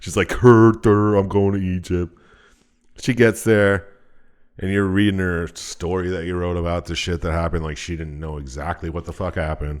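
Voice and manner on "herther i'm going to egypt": dopey, goofy cartoon dog character voice. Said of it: "now she talks like fucking dopey dog character".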